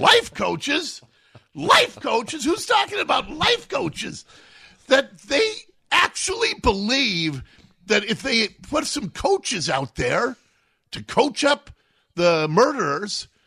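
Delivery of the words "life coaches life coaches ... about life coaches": very high, incredulous, rapid-fire, repetitive ranting voice. Retelling first hearing the news on air, like Jim Mora talking about playoffs. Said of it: "I sounded like Jim Mora talking about the playoffs".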